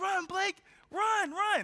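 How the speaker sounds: very high, slow, drawn-out cheering yell. Retelling teammates urging a runner: imitating teammates yelling. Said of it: "my teammates are like".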